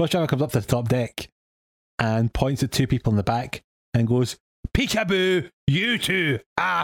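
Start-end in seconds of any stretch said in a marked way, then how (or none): 4.7-6.8 play-acted, very slow, high, aggressive barking shout. Telling a story, quoting a bus driver pointing at two passengers: retelling an aggressive shout. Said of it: "I'm just shouting the most aggressive tone".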